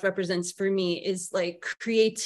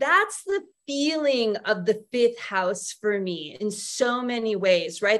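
ordinary talk

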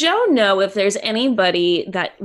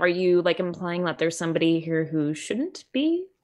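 normal talking voice

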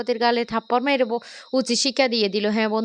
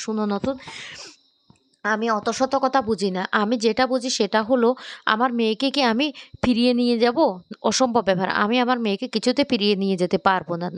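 ordinary delivery

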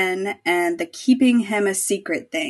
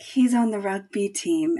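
put-on dreamy voice, quieter; 4 dB quieter than usual. Retelling Charlie saying he's on the rugby team, imitating Charlie's dreamy tone. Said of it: "so dreamy when he's like".

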